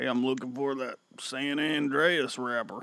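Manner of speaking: put-on country accent, Oklahoma style. Asked whether customers come in knowing products, the speaker mimics one in a redneck accent. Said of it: "redneck accent".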